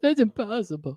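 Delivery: exaggerated, silly, high goofy voice. Mocking the other speaker's exaggeration, silly Luke voice. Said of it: "I'm doing it like silly voice".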